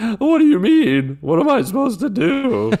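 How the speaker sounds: very high, loud, squeaky voice cracking and swooping. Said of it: "Quit your voice crackling".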